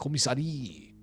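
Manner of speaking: odd, weird put-on French accent. Saying a place name aloud, in a weird French accent. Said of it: "I don't know why I say this with a weird French accent".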